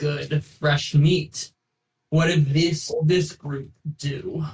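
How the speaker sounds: words squeezed out through clenched, gritted teeth. Voicing a halfling arena figure greeting the group: speaking through his teeth. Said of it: "with kind of through his teeth".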